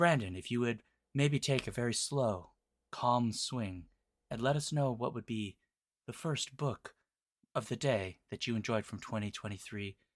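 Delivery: very soft, hushed golf broadcast commentator murmur. A host asks Brandon for his first book of the year, in a golf show announcer voice. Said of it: "Please stop doing that voice".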